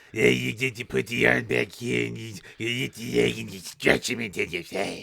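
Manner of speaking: put-on rough, gravelly voice. Describing how to stretch someone in a hold, gravelly Stu Hart impression. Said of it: "you're just giving more gravel".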